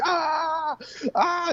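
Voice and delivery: very high, cartoonish yelps and cries of pain. Retelling hearing guards beat a man: imitating cartoonish pained yelps. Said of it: "It was like out of a cartoon".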